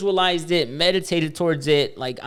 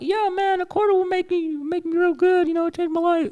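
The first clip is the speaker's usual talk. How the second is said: weird, shady put-on voice, very high; 13 semitones higher than usual. Retelling what a guy said, doing his weird sketchy voice. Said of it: "I'm doing his voice because he said he had a weird voice".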